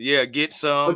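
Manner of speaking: ordinary talk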